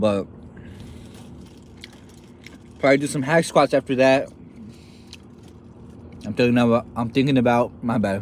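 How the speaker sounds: mouth full, chewing while talking. Chatting about training while eating, talking with a mouthful. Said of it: "sorry for chewing with a mouthful".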